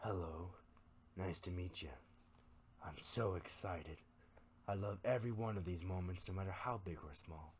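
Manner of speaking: gentle, soft, airy, breathy voice. Narrating a story, the demon leans closer to a panicking victim: soft, breathy voice. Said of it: "says in a slightly soft and breathy voice".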